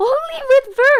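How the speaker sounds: very loud, high, emphatic scream. Teaching that an ending works only with verbs: screaming to emphasize. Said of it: "That's why I'm screaming".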